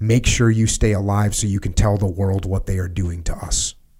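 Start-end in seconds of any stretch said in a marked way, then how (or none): none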